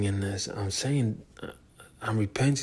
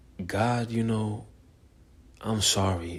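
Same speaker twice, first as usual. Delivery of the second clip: acted crying, pleading and apologetic. Recounting kneeling in church asking god for forgiveness; retelling a tearful plea. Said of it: "I was crying like a baby".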